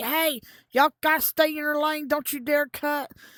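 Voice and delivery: play-acted, high-pitched, screamed scolding. Retelling a worker telling the crowd not to cut: imitating a worker screaming. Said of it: "screaming at everybody".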